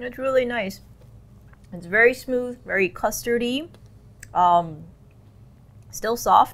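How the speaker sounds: speaking through a mouthful. Tasting sugary icing and describing it, talking with mouth full. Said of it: "I have a mouthful of sugar now".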